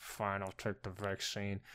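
very quiet, grudging, through gritted teeth. Imitating people whose livelihood is at risk agreeing to the vaccine, through gritted teeth. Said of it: "through, like, gritted teeth".

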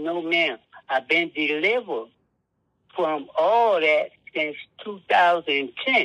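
ordinary talk, nothing marked

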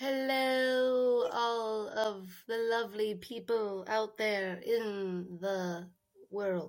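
low mechanical robot voice, drawn out. Co-host asked to say hi to the podcast listeners, talking like a robot. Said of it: "so I start talking like a robot".

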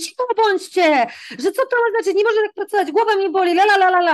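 high-pitched, scolding shout. Retelling snapping at noisy children while grading quizzes, re-enacting shouting at the kids. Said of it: "wstałam i krzyknęłam na nich".

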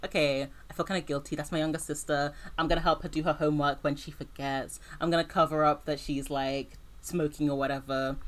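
normal talking voice

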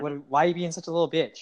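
ordinary talk

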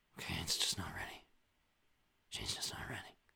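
soft, hushed, barely voiced whisper. Speaking to someone across the room who can't hear, whispering. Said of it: "That's whispering".

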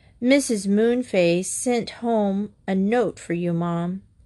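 ordinary delivery, nothing marked

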